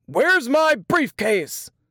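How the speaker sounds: thunderous booming voice. Papa comes home and calls out through the house, thunderous voice. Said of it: "The thunderous voice rolled through the house".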